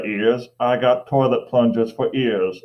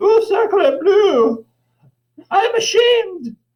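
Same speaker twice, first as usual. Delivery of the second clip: mock bulldog voice, much higher and louder; 4 dB louder than usual. Describing a dog that kept making messes, voicing its look; voicing the bulldog's look. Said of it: "as if to say".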